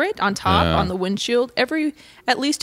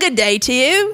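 prim, proper put-on British accent, pitched up; 5 semitones higher, 3 dB louder than usual. Joking with co-hosts about saying goodbye: british accent. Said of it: "in a British accent".

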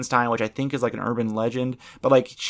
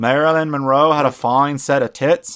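put-on politician voice, almost British accent, louder; 2 semitones higher, 5 dB louder than usual. Trying out an impression for the others, JFK impression, sounds almost British. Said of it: "That sounds British almost".

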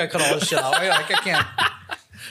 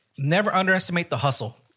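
ordinary talk

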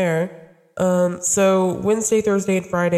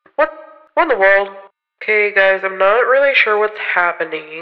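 telephone-filtered voice, louder; 5 dB louder than usual. Greeting listeners, puzzled by own voice: sounding like through a phone. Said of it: "it sounds like I'm talking through a phone".

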